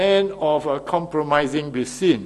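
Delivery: ordinary delivery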